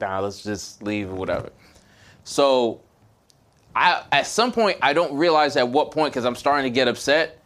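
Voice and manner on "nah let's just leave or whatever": quiet, low, calm, hushed murmur. Telling a story, the speaker imitates a calm companion behind them speaking quietly. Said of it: "just quietly like".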